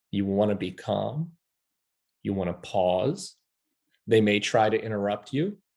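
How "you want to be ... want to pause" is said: gentle, unhurried, soft, slow, calm, with pauses. Advising on difficult interactions, demonstrating how to speak: soft and slow. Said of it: "Soft and slow. You want to speak like this".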